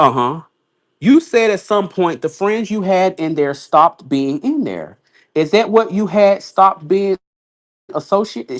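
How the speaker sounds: plain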